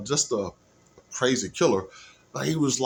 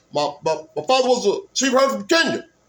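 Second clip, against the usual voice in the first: loud, pitched-up, declaiming speechmaking voice; 9 semitones higher, 5 dB louder than usual. Practicing voices, doing a Barack Obama impression. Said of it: "Barack Obama has a voice".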